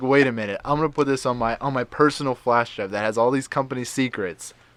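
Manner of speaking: ordinary talk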